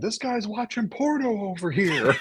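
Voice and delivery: very high-pitched yelling. Retelling a video that cuts to a guy at the screen: imitating a guy yelling. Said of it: "the guy yelling at the screen going".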